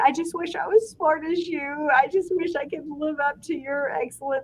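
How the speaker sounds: tearful, sobbing, high, crying voice. Retelling how a child answered a scolding: imitating Ellie crying. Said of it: "she would start crying and she's like".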